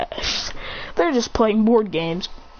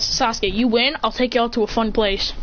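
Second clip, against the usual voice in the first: usual speaking voice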